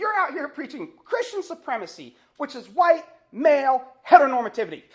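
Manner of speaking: very loud, high-pitched yelling shout. Retelling how a student yelled at a campus preacher: imitating a student yelling. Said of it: "he yells out".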